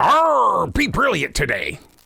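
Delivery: slow, put-on pirate voice with arr. Saying goodbye to a guest as a pirate: pirate voice. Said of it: "how would a pirate say "be brilliant"".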